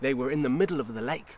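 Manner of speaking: plain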